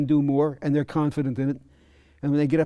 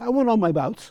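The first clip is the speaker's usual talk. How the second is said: put-on New York Long Island accent; 7 semitones higher than usual. Retelling what a man he taught told him, imitating a Long Island accent. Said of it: "in his inimitable Long Island accent".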